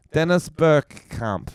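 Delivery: fake, mock Dutch accent. Showing how Dutch listeners talk by saying a footballer's name, mock Dutch accent. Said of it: "The best way to speak an accent".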